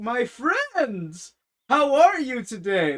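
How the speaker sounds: hearty, jovial, booming voice, sing-song. Retelling how a regular customer greets people: imitating a jolly greeting. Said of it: "he's always jolly. He's like".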